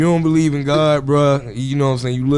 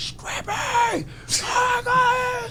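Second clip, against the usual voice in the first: high-pitched screaming fan voice. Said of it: "that was her voice screaming".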